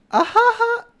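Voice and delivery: very high, loud laugh. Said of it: "Yeah, I be laughing".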